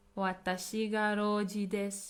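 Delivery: normal talking voice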